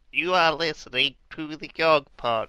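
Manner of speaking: imitated woman's voice. Recalling a woman who says weird stuff on a liner: imitating her. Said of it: "She goes like".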